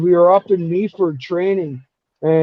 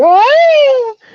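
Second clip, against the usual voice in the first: put-on high, loud girlish scream. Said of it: "'cause I scream like a girl".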